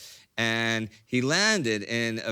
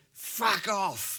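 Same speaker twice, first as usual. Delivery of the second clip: put-on British accent, higher; 10 semitones higher than usual. Retelling a pilot's words to locals with pitchforks: imitating a British accent. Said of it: "I said in the best, best British accent I could".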